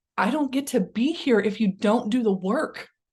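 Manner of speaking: mock earnest, pleading, begging tone. Retelling what an inner self said in a meditation: imitating a pleading plea. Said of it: "with almost a look of pleading".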